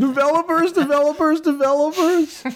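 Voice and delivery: very high pitch, word repeated insistently and hammered. Showing a Steve Ballmer impression. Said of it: "I got him down pat".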